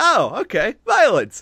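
high-pitched, pleased tough-guy voice. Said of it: "He's just like".

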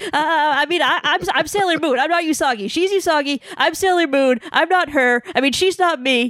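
put-on high, flustered, panicked, stammering rambling. Retelling a scene where Usagi is recognized, imitating her freaking out. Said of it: "she's just, like, freaking out".

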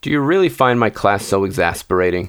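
ordinary delivery, nothing marked

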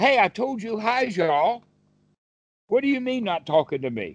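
high-pitched, huffy, annoyed rabbit voice. Telling a folk tale, voicing the rabbit when nobody answers: huffy, annoyed rabbit. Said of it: "the rabbit gets all huffy up".

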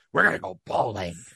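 rough, creaky wrestling promoter showman voice. Quoting what someone said in recent games, the speaker uses a Vince McMahon voice. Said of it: "Let me use my Vince McMahon voice".

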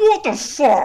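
put-on very high, loud blurt around a mouthful. Retelling being startled while eating a burger: imitating talking with mouth full. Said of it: "a mouthful of food, and I went".

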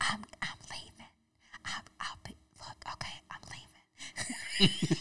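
very slow, stumbling, halting whisper. Retelling how Christy announced she was leaving: imitating Christy whispering. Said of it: "Why are you whispering?".

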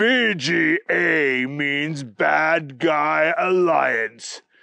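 mechanical robotic voice, announcer-like delivery. Reading a story where an unseen voice answers a question, booming robotic voice. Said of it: "the voice boomed out".

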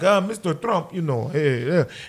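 deep, hesitant head-of-state voice. Retelling how the Russian president answered: imitating Putin. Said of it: "And Putin's like".

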